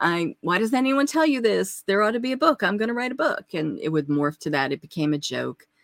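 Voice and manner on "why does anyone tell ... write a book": heavily sarcastic, joking, acted out, pitched up. Recalling what they used to say to people they knew, retelling a sarcastic joke. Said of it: "very jokingly, very sarcastically would say".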